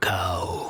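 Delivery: grunting, brutish voice. Voicing an ogryn chewing a cow, looking down at a player: grunting ogryn voice. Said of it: "looks down towards you and just goes".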